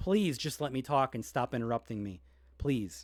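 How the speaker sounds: put-on calm, polite, patient, patience stretched thin. Retelling own earlier request to stop interrupting: imitating own polite, patient plea. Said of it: "politely and very, very patiently asked you".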